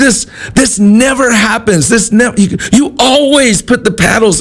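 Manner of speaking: very high, frantic, panicked screaming.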